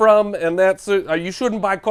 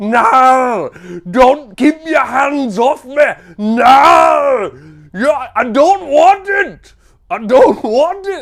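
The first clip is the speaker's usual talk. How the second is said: bad put-on Scottish accent, loud and drawn out; 5 semitones higher, 6 dB louder than usual. Joking that the game title Knarr sounds like a no, in a terrible Scottish accent. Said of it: "this is a terrible accent saying no".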